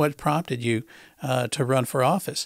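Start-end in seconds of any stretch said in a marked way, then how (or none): none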